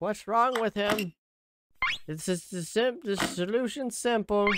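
high, mild mock yell. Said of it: "yelling at me like".

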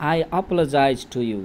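ordinary talk, nothing marked

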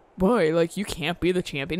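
normal talking voice

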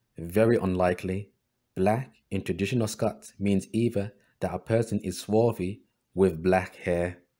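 ordinary delivery

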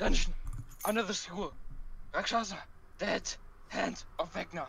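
gasping, completely winded, high-pitched shout. A player in character shouts a warning to the school staff, completely out of breath. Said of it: "completely out of breath".

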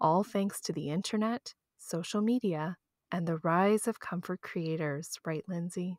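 subdued, softened, toned-down soft delivery. Reading an intro and handing over to the other speaker, in a toned-down voice. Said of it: "tone my voice down a little bit and read my intro like this".

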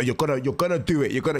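put-on angry outburst. Retelling an outburst at the president: imitating Katniss's outburst. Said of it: "that outburst of like".

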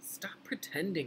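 high, dead earnest half-whisper. Reading a story aloud, one character's line to another, half-whispered. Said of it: "he whispered".

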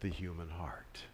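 soft, hushed, unvoiced whisper.

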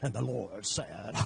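creaky, put-on southern preacher voice. Joking about having a radio voice, going into a southern preacher voice. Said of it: "You don't want me to go southern preaching".

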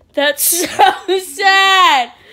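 high, slow laughing wail of mock sadness.

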